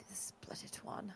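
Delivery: very soft, barely voiced muttered whisper. Examining a dead body in a game, the player's character is muttering under breath. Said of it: "and I say under my breath".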